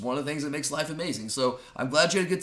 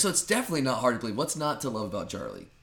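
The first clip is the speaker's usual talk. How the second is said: heavily sarcastic, laid on thick, swooping sing-song delivery; 3 semitones lower than usual. Praising the co-host while teasing him: sarcastic tone. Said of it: "I hear some sarcasm there".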